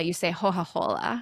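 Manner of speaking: Florentine accent, hard c pronounced like h. Show how people in Florence ask for a drink, in a Florentine accent, C pronounced like an H. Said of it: "They pronounce it like an H".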